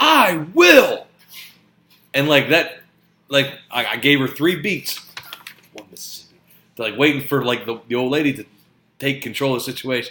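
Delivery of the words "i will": put-on child voice, loud, high, raised. Retelling a child's reply to a parent: imitating a raised voice. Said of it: "my child raises her voice and says".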